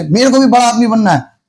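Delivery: plain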